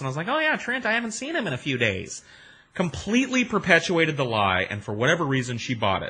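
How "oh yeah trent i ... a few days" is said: disguised put-on voice, pushed very high, swooping. Retelling pretending on the phone to be a cousin: retelling a put-on higher voice. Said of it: "made my voice a little higher than it was usual".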